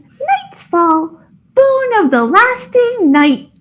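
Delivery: cute, adorable, very high-pitched tiny voice. Voicing a talking sword answering how to address it, adorable voice. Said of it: "this adorable voice goes".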